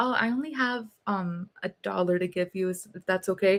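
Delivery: gentle, mild, easygoing, soft, calm, disarming voice. Retelling asking a bus driver to accept a dollar, in a calm soft voice. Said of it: "I speak in a very calm and soft voice that's disarming".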